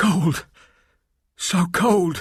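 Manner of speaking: high, breathless gasping out the words. Reading a story aloud, a character feeling sudden cold: gasping. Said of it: "gasped Delilah".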